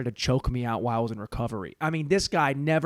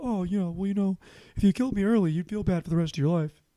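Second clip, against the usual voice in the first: higher, put-on elderly man's voice; 5 semitones higher than usual. Retelling how he changed someone's voice, the speaker imitates an old man's voice. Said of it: "I changed his voice. Now he's an old man".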